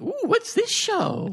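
very high, jolly, giddy voice, drawn out. Retelling how Bree came in jolly, imitating Bree being giddy. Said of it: "she's all giddy".

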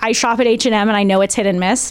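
ordinary talk

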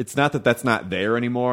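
normal talking voice

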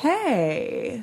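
hey stretched out slowly, long and dragged. Imitating how someone answered the phone every time, long drawn-out hey. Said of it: "a dragged out hey".

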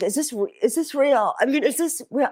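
mock teary, high, crying voice with disbelief. Retelling finding old history online, imitating own tearful voice. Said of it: "I'm literally crying".

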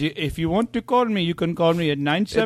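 put-on Indian accent. Retelling a phone call, the speaker quotes the man in an Indian accent. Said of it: "I'm just doing the accent".

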